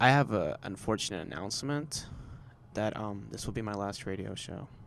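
put-on solemn, mournful, fake sad tone. Making a fake farewell announcement as an April Fools joke: fake sad tone. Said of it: "kinda sounds so sad right now".

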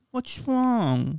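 put-on cooing baby talk, very high and hushed. Describing a couple who did nothing but talk to each other this way: imitating a couple's baby talk. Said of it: "just baby talk".

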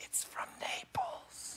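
hushed, breathy, very soft confiding whisper. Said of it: "just whispering to me about food".

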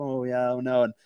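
acted sad voice. Speaker shows how their voice changes on sad topics, imitating own sad voice. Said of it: "when I get into sad topics".

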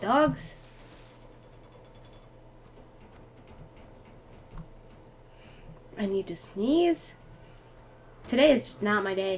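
quiet, hushed, frightened murmur under the breath. Playing a tense game on stream while hearing dogs, quiet and scared. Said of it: "Sorry, I'm so quiet, I'm like really scared".

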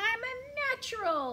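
squeaky voice. A narrator reads a bird's line as he practices flying: squeaking. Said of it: "he squeaked".

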